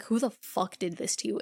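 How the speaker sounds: anguished, distraught, upset, demanding tone. Retelling a show scene, quoting a man's line: imitating a distraught character. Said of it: "And he's distraught".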